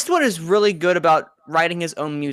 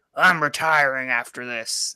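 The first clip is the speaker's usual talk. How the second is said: terrible, way too deep, slow voice; 4 semitones lower than usual. Imitating an old director announcing retirement: terrible Clint Eastwood impression. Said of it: "terrible, terrible Clint Eastwood impression".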